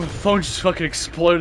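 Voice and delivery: ordinary talk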